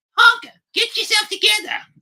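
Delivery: very high, loud, squeaky puppet voice. Retelling a puppet skit, the speaker quotes Elmo in an Elmo voice. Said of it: "With that voice".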